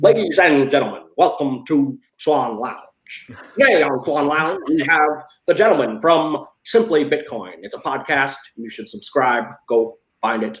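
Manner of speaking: put-on old-style veteran newscaster announcer voice. Suggesting a fun way to open the Swan Lounge show: Walter Cronkite impression. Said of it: "that was my Walter Cronkite".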